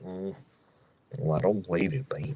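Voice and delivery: very low, soft cartoon voice. Recalling a hot tub scene where Goofy talks to Pete, in a low Goofy impression. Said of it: "just so low".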